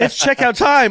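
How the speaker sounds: very high voice breaking up, cracking. A player describing a grenade blowing someone up, voice cracking. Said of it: "my voice cracked".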